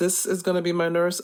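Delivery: normal talking voice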